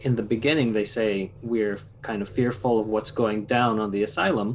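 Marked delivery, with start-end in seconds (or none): none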